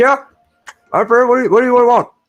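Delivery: very high, loud voice talking through a mouthful. Voicing a captain who answers while finishing her food: talking with mouth half full. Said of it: "talking to you with her mouth kind of, uh, still half full".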